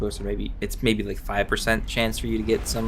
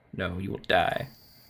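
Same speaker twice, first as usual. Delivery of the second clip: threatening voice, quieter; 3 semitones lower, 4 dB quieter than usual. Answering the begging enemy agent in a menacing voice. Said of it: "I don't know why I'm doing voices".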